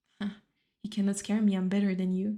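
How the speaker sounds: ordinary talk, nothing marked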